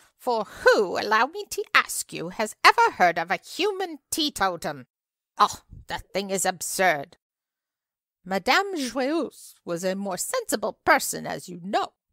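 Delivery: full-voiced outcry at the top of the voice. A narrator reads an old lady's speech, crying out at the top of her voice. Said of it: "cried the old lady at the top of her voice".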